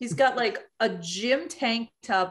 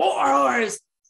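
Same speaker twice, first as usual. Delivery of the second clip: loud, raised screamer-style yelling voice; 3 semitones higher, 5 dB louder than usual. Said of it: "in like his screamer voice".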